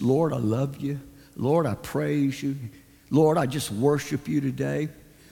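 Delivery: very low, soft, plain conversational tone. Describing how their father always began his prayers: imitating Dad's normal-toned prayer. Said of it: "start out in a normal tone, not too loud".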